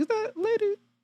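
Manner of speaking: very high, soft, shocked squeal. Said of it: "I'm like".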